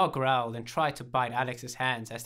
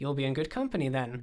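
ordinary delivery

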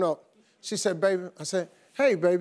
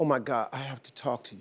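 put-on very low, hushed, uneasy, worried tone; 9 semitones lower, 6 dB quieter than usual. Retelling how a woman first spoke to him before her doctor news, imitating a troubled voice. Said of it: "I could tell in her voice something was wrong".

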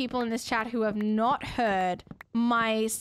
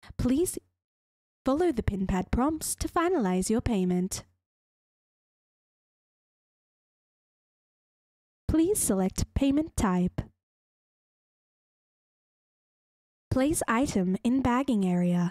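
robotic, recorded, automated machine voice. Showing chat the voice of a self-checkout machine: imitating a self-checkout machine. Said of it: "take my self-checkout voice".

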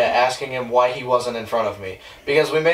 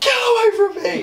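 imitated frightened scream, much higher in pitch. Retelling what a companion yelled when a guy jumped out, retelling a frightened scream. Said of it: "Jeremiah was like".

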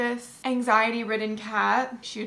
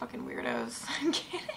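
normal talking voice

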